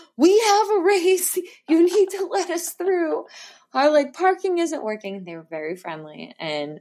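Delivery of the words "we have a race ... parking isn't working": put-on high-pitched hollering, very high. Retelling yelling at police officers out the car window before a race: retelling a yell. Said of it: "I'm yelling at them out the window like".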